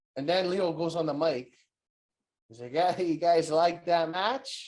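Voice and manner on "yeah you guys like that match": slower, nasal put-on voice. Recapping a match where Leo goes on the mic, nasally Leo impression. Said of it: "He talks like all nasally".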